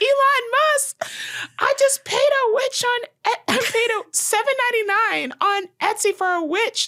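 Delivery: put-on shrill, very high top-of-lungs scream. Retelling a woman's video on TikTok: imitating someone screaming. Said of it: "she was at the top of her lungs".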